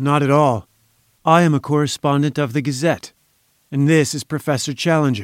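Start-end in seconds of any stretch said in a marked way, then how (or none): none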